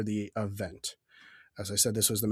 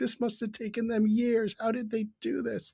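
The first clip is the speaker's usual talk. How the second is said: mock overwhelmed, awestruck shriek, very high; 12 semitones higher than usual. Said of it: "was just screaming".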